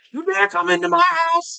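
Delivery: put-on ragged, rough, very high screaming. Reenact how you'd start on him while driving, screaming like Leo in Django. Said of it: "start screaming at him like Leo did".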